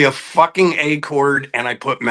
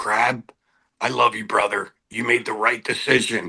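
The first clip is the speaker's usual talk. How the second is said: put-on whisper, lower and quieter; 4 semitones lower, 5 dB quieter than usual. Retelling phone calls from Robbie that end in hang-ups: imitating Robbie whispering. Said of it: "he would just whisper into the phone".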